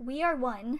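ordinary talk, nothing marked

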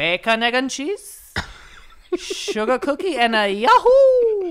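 very high, loud, swooping cartoon voice, "yahoo" stretched out. Retelling how a lunch lady announced a breakfast order, in Super Mario voice. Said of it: "She's fucking Super Mario's fucking lunch lady?".

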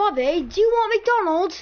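put-on British accent, high. While gaming with friends, voicing a quick skit, british accent. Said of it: "why'd you do a British accent?".

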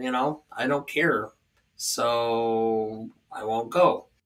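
put-on deadpan delivery. Retelling their reply to people who said it wasn't good: retelling a deadpan reply. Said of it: "I just kind of deadpanned and said".

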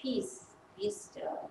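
very quiet, calm, hushed whisper. A speaker retells what Jesus said, in a put-on very calm voice. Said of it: "He says in a very calm voice".

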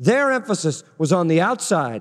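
stress on their, falling pitch, said close.

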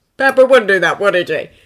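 with a hint of pride. [name] speaks to Steve as they walk out of the room, almost proudly. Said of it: "[name] spoke almost proudly".

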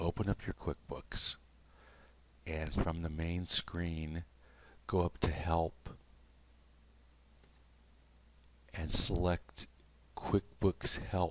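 quiet, soft speaking voice. Giving software help steps very early in the morning: talking quietly. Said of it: "I'm talking quietly".

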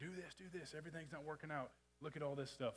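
mock pushy, goading cry, pressing hard. Acting out the devil pressing someone with distractions: devil screaming. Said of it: "and screaming at you".

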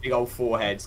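plain

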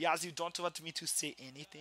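put-on German accent on English. Teasing the other speaker by repeating their words, in a German accent. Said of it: "but like in a German accent".

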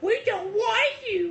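mocking cutesy voice, very high, slow, drawn out.

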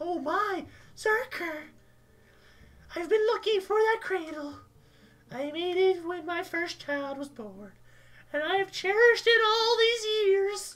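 put-on very old woman's voice, pitched very high. Voicing the pregnant lady character, very old woman voice. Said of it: "Why does she sound like she's like 90?".

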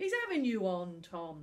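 ordinary delivery, nothing marked

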